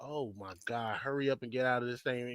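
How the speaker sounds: put-on panicked, urgent voice. Retelling watching someone trapped underwater: imitating own panic. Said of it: "I'm panicking for you".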